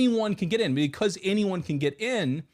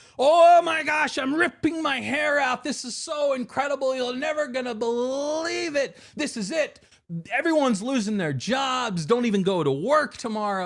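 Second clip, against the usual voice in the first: high, loud, breathless, over-the-top gushing. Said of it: "the people that go out there".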